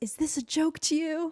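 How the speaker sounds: acted-out high, sudden yell. Retelling how a guy in the stall yelled at you, imitating his yelling. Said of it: "one of the guys in the stall just yells".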